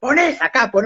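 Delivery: mock high, barked, shouted yelling. Retelling a prison guard's order to place the hands: imitating a guard yelling. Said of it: "me empezó a gritar".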